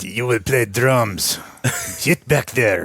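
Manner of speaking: put-on disgusted French accent. Retelling a band teacher ordering a new student to drums: imitating Mister LaFonte with disgust and French accent. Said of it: "this Frenchman just looked at me with absolute disgust".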